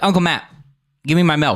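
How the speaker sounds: put-on bossy, demanding little-kid voice. Retelling how the kid asks for his milk: imitating Liam demanding milk. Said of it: "he'll be like".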